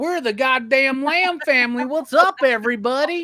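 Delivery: put-on Alabama country accent. Retelling how family from Alabama greets people: imitating Alabama family's accent. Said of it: "they're all like".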